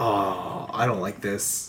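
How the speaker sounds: low, soft, slow, disappointed aside. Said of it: "and I'm like".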